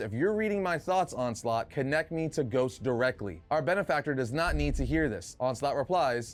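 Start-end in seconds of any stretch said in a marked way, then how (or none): none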